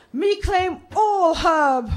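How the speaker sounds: slow, high, grand declaring voice.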